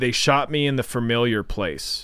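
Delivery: ordinary delivery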